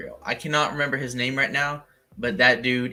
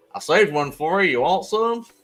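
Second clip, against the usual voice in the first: heavy put-on Southern drawl, loud and high; 5 semitones higher, 5 dB louder than usual. Speaker retells what he said to someone on screen, in a thick southern drawl. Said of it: "in my very thick southern drawl".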